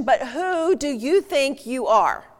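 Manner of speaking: slow, confrontational, accusatory tone. Speaker demonstrating to listeners how a question can land, confrontational accusing tone. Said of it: "if I ask that in that tone of voice".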